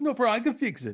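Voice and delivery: put-on Indian accent. Retelling what a man said, in a bad Indian accent. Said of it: "someone doing a bad Indian accent".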